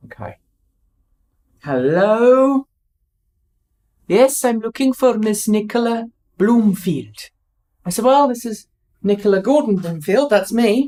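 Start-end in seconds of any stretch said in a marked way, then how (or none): 1.6-7.2 over-the-top, bad, fake Welsh accent. Retelling a phone call from someone at HMRC, bad Welsh accent. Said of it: "Welsh, bad Welsh accent, I know".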